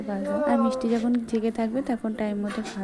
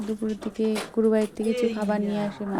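plain

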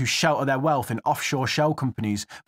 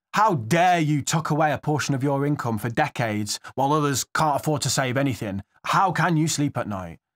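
slightly sarcastic, faux-indignant tone. Mocking a think tank's view of savers as rich: sarcastic tone. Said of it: "I hope from my tone that you can tell I'm being a bit sarcastic".

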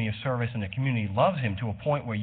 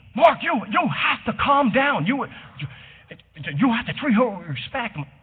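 mock scream, higher and louder; 12 semitones higher, 6 dB louder than usual. Retelling how someone at the court started screaming: imitating someone screaming. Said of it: "she started screaming at me".

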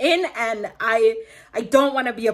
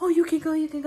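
put-on terrified whisper, higher pitch; 6 semitones higher than usual. Retelling a man's reply after the police were called: imitating someone whispering in terror. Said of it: "whispering and he's, like, terrified".

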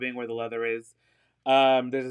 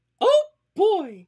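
loud, high-pitched squeaking; 7 dB louder than usual. Spotting a Mickey Mouse sticker, the speaker does a really bad Mickey Mouse impression. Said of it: "my really bad Mickey Mouse impersonation".

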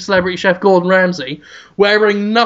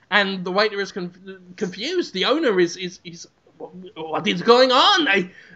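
ordinary talk, nothing marked

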